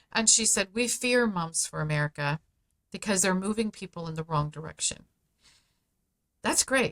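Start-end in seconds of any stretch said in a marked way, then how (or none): none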